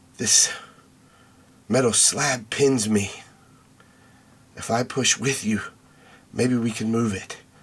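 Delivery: faint, soft, hushed, barely-there voice. A trapped voice in the player's head answering, in a faint, soft voice. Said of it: "a faint, soft voice in your head".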